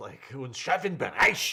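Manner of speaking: put-on German-accented pronunciation. Explaining how the speaker says the German term, in a put-on German accent. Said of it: "I also say it with a certain accent".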